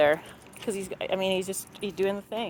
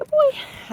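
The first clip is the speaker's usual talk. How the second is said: very high, thrilled, excited voice. Demonstrating the release word for a dog, say it in an excited voice. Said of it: "I'll say it in that kind of excited voice".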